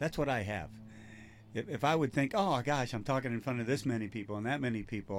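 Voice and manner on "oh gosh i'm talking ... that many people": ordinary talk, nothing marked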